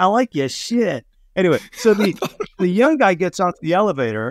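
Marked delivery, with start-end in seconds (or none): 0.0-1.1 mock Australian accent, higher, slower. Retelling what an intern said in an elevator, in an australian accent. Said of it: "that was an Australian accent".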